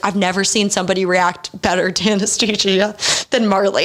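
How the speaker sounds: plain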